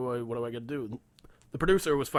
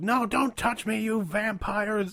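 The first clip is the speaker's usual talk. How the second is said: acted, high, shrieking, stretched-out, drawn-out scream; 8 semitones higher than usual. Retelling how grandma screamed at a man in the emergency room: imitating grandma screaming. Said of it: "she was still fucking screaming at him".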